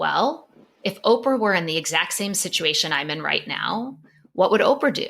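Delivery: normal talking voice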